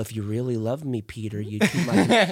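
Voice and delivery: coaxing, manipulative, guilt-tripping tone. Acting out a manipulative reading of a scripture line: mock manipulative tone. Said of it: "manipulative deal".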